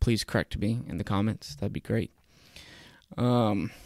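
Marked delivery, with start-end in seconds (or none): none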